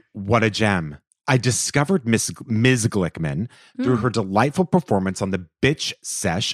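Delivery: ordinary delivery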